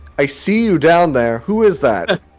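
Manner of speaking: loud shouting, calling out. Voicing an unseen figure asking who is knocking on doors: calling out. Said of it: "as the voice calls out".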